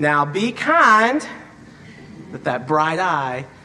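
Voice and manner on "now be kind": put-on West Texas accent, high-pitched and raised. Speaker quotes her grandmother, who caught the siblings fighting, in a west texas accent. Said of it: "would say to us in her West Texas accent".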